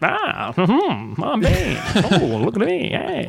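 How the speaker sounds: very slow, drawn-out, swooping vaudeville voice. Describing how a movie villain sounds, doing a Bane voice like a vaudeville character. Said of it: "like a vaudeville character, that voice".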